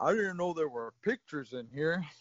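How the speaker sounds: dopey, simple-minded boxer character voice. Retelling a movie scene to a friend in a Rocky voice. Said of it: "I'm losing the fucking Rocky voice now".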